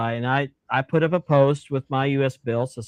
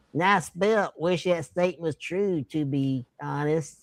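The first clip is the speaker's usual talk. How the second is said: hushed, backwoods-style country drawl; 3 semitones higher, 7 dB quieter than usual. Reading a written statement aloud, reading in Jasper's imagined voice. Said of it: "read this in what I think is his voice".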